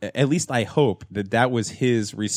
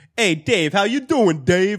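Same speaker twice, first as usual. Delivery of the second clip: very high, amped-up, exaggerated Italian-American accent; 11 semitones higher, 4 dB louder than usual. Mimicking how people greeted each other after a TV show, exaggerated Italian-American accent. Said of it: "everybody amped up their Italianness".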